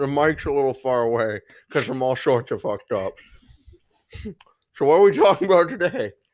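speaking around candy in mouth, hard to talk. A podcast guest with a candy cane in his mouth, talking with candy in mouth. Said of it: "I can't fucking talk".

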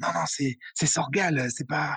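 whispering. Acting out what someone would say in reply, whispering. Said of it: "tu dis en chuchotant".

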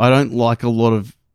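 ordinary delivery

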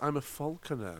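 nice and slow, careful, very quiet, hushed. Explaining to the listeners what you do, saying it nice and slow. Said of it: "you say it nice and slow".

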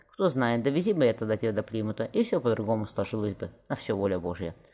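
ordinary delivery

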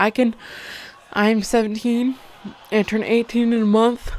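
words stretched out, spoken through a yawn. Talking about dating someone younger, speaking through a yawn. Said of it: "Sorry, I'm yawning".

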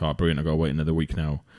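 ordinary talk, nothing marked

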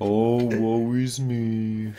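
very slow, glum, dragged-out gloomy moan. Answering a call to stop the bit: mock gloomy Eeyore voice. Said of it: "with the Eeyore".

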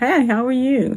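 cheerful, upbeat. Showing how to greet family, friends or someone on the street: upbeat voice. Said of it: "And do it in an upbeat voice".

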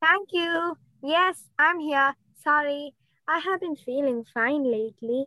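downhearted, dejected, down-in-the-dumps voice. A guest answers a show host's question, downhearted. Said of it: "what's the reason behind your downhearted voice".

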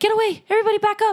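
very high, fast, urgent commanding shouted yell. Describing a scene, the speaker acts out what he yelled, retelling a yell. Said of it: "He also starts yelling like".

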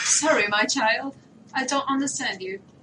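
put-on British accent. Playing a mother who answers her child in English: put-on British accent. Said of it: "Encima con acento británico".

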